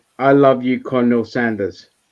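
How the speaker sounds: usual speaking voice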